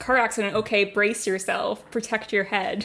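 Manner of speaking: plain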